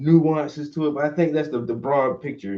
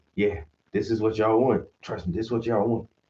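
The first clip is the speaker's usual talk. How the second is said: mock whisper, lower; 5 semitones lower than usual. Retelling how america keeps urging them on: imitating someone whispering. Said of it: "America just keep whispering like".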